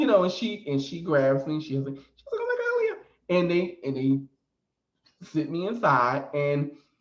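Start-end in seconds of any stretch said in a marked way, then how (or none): 2.4-3.4 very high, squeaky exclamation. Retelling what the wife shouted while grabbing the speaker: imitating a squeaky voice. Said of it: "she had that squeaky voice like her".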